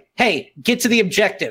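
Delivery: firm fatherly voice. Retelling what Scott told a reluctant teammate, in a put-on dad voice. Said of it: "Scott puts on dad voice".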